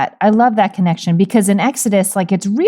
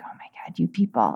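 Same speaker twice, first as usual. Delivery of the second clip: barely voiced, hushed mutter under the breath; 4 semitones lower, 13 dB quieter than usual. Picturing how Jesus might say a line, muttering under his breath. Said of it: "saying that line sort of like under his breath".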